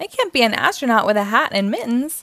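ordinary delivery

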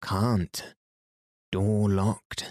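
slow, deliberate, measured disguised voice with spaced-out words. Reading a story, a boy calls from a church tower: deepest voice, very slow and loud. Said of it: "the same voice replied".

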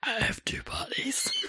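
very slow, deep, creepy, spooky whisper. Saying an old line meant to freak people out: deep scary voice. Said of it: "what I used to say when I was a teenager to freak people out".

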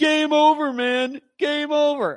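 high, loud, panicked shout.

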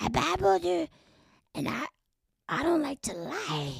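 high, swooping, drawn-out, stretched-out voice. Doing an impression while describing a changing voice: Natasha Lyonne voice. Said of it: "Is that her?".

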